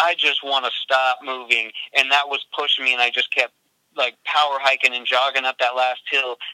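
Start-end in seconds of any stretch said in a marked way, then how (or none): none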